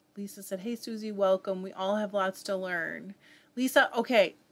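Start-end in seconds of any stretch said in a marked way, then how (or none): none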